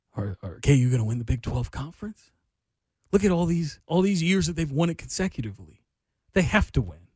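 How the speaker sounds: normal talking voice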